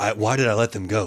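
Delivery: low, fake muttering voice. Acting out Straff in shock after they leave: muttering as Straff.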